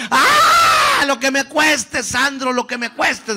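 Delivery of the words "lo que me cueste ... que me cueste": put-on very high, loud, shrill, frenzied cry. Retelling what his mother screamed at him, imitating her shouting. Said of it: "gritaba mi mamá".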